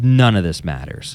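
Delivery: acted-out angry voice, raw and traumatized. Quoting a teacher answering a student in front of the class, imitating an angry, traumatized voice. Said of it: "in an angry, just traumatized voice".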